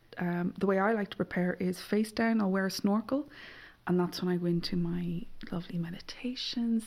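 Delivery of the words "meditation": cheerful, warm, happy, content tone. Describing a face-down snorkel routine before meditating: warm, happy "meditation". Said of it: "See how I say meditation different now? It's not in the sulky voice".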